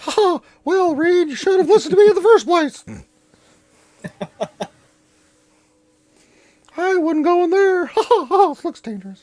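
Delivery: pitch way up, belted. Voicing a character who jumps on a player's shoulder: Mickey Mouse voice. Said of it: "Mickey Mouse jumps on your shoulder".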